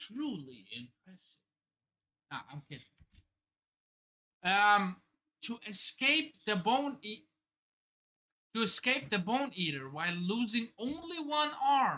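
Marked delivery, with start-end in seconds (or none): 0.0-1.4 very low, very quiet, hushed emo drone. Narrating a figure's move on screen, the speaker voices his words in an emo accent. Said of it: "let me try to do this in emo accent".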